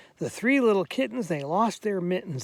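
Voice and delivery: plain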